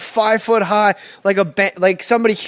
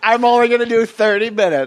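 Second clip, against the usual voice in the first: teasing, mocking put-on voice; 3 semitones higher than usual. Teasing the other speaker by imitating his reply: imitating the other speaker. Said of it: "You're like".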